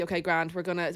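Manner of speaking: ordinary delivery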